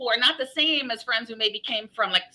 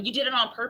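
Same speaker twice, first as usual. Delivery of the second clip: ordinary talk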